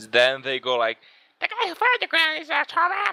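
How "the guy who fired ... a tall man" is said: distorted, very high, duck-like voice. Acting out a witness statement with the voice disguised, in a duck-like voice. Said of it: "Either that or a duck".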